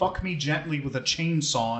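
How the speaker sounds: plain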